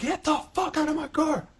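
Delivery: put-on shrill, very high, drawn-out, drunken raging scream. Retelling a drunken fight in a car, imitating own screaming. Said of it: "I'm screaming, I'm raging".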